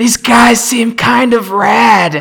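loud stage whisper, "rad" drawn out. Voicing a character who turns to Kyle: loud stage whisper. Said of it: "that kind of whisper that's not a whisper".

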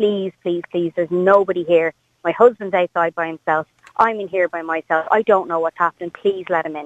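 ordinary talk, nothing marked

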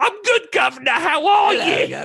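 put-on over-the-top Cockney accent.

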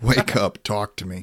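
ordinary delivery

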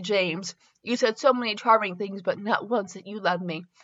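usual speaking voice

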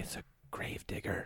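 slow, very hushed, barely voiced whisper. Naming a gift the child might overhear on the podcast: whispering. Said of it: "I do have to whisper".

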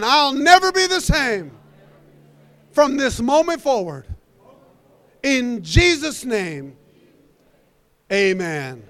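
loud, high, full-voiced proclaiming delivery. Speaker leads a church prayer, repeating the vow again, saying it louder. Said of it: "Say it again".

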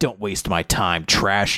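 cold, low, dismissive, taunting villain voice.

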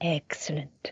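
breathy, whispered cartoon voice. Naming the voice just used: Mister Burns voice. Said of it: "this is, um, Mister Burns, isn't it?".

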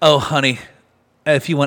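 mock patronising, knowing tone. Retelling a woman's reply to the speaker's remark: mimicking a condescending tone. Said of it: "She was saying it condescendingly".

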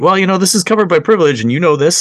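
slightly sarcastic, snide, formally polite lawyerly tone. Retelling an exchange with the convoy lawyer at an inquiry, a bit sarcastic. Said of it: "it sounded a bit sarcastic".

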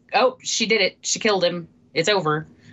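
ordinary talk

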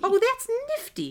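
voice pitched way up, very high. Quoting an aunt's favorite word: imitating Aunt Judy. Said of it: "You were possessed by Aunt Diane".

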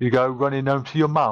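mock mixed accent, half Cockney, half Brummie.

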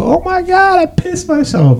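very high, slowed, panicked squeal.

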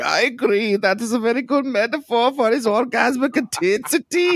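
put-on very high voice sliding into a slight Irish accent. Joking about Oppenheimer, the speaker does a Werner Herzog impression, slightly Irish. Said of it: "you went a little Irish at the end there".

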